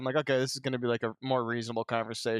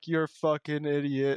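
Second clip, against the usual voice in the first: acted-out insulting tone, much slower; 2 semitones higher than usual. Speaker imagines how another guy would have snapped at him; imitating an insulting jab. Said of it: "he would have been like".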